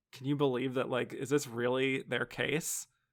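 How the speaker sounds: ordinary delivery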